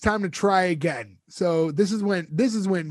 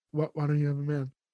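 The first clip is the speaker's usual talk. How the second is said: tentative, afraid, timid, hushed half-whisper; 3 semitones lower, 5 dB quieter than usual. Retelling how a character timidly asks a question: imitating a timid half-whisper. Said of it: "whispers it at first".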